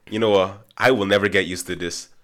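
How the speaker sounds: ordinary talk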